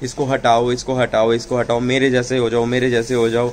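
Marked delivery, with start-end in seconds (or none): none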